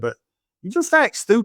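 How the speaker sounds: thick, put-on New Orleans accent, sing-song. Retelling what a woman from New Orleans told you, her boss, in a really heavy New Orleans accent. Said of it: "really heavy New Orleans accent".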